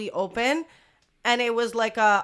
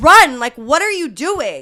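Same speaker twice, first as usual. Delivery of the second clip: imitated own shouting, higher and louder; 3 semitones higher, 11 dB louder than usual. Retelling yelling at a friend who was walking: retelling own yell. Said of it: "yelling at her".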